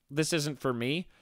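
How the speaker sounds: normal talking voice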